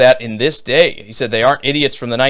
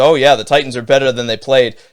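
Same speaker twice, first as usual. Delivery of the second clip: mocking, put-on sarcastic tone. Reading out a viewer's comment that is sarcastic: imitating a sarcastic comment. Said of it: "he's being sarcastic again".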